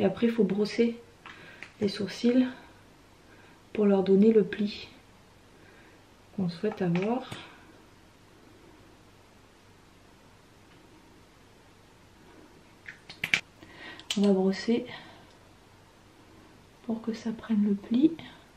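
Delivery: speaking in a whisper. Brushing eyebrows in front of a mirror, whispering. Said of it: "Je chuchote".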